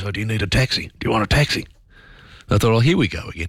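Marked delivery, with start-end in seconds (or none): 0.0-1.7 hushed voice, quiet tones. Traveler retelling someone approaching them at an airport, retelling a hushed offer. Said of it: "said sort of in a hushed voice".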